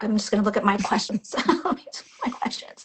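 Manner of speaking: tearful, holding back tears, on the verge of crying. A live-stream host after a guest recounts her story, holding back tears. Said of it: "trying not to cry".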